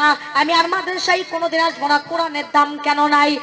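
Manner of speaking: ordinary talk, nothing marked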